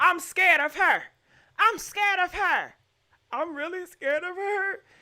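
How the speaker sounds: put-on fake crying, mock sobbing. Mocking a woman in a video, imitating her fake crying. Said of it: "fake crying like this".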